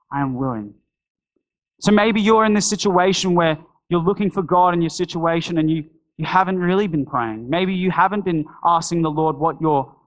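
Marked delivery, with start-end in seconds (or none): 0.1-0.7 plain, hushed, soft stage whisper. Acting out the reply to a prayer: imitating a half-whisper. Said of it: "simply whispers".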